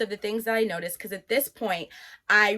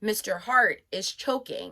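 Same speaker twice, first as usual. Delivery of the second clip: plain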